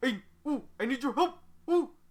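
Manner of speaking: loud, high, hooting monkey voice full of oohs. The speaker predicts a long lore monologue from her: ooh monkey voice. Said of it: "in the ooh monkey voice".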